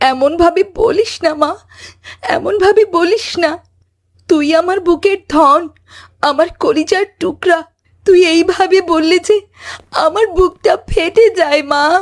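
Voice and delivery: grief-stricken, mournful, grieving voice. A mother begs her bedridden child not to talk of dying: grieving plea. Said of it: "mother grieving dying daughter's words".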